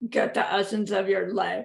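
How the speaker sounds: gruff, creaky, rough voice. Quoting what they say in the tradition when asked, in a gruff voice. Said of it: "they say in a gruff voice".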